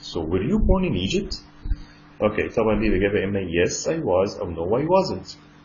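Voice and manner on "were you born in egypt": rising pitch at the end on Egypt. Teaching English question intonation, rising intonation on Egypt. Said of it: "ما ننساش الصوت بتاعنا يبقى rising، الانتونيشن بتاعنا يبقى rising intonation".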